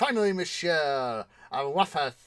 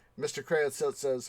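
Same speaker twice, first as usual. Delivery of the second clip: plain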